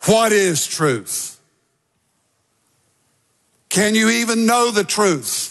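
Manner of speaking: doubting, cynical tone. Quoting a ruler questioning a prisoner about truth: cynical Pilate voice. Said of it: "I personally believe rather cynically".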